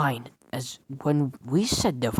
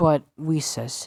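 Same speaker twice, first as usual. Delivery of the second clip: usual speaking voice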